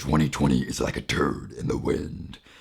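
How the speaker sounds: throat-straining character voice. Joking about the year twenty twenty in a Venom voice. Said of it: "That's my Venom impression".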